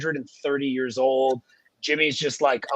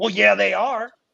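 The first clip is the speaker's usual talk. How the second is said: sudden, abrupt near-shout, pitched up; 7 semitones higher, 3 dB louder than usual. Retelling being cut off abruptly: imitating Jimmy nearly shouting. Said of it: "nearly, like, shouts at me".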